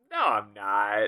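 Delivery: very slow, drawn-out, mocking delivery.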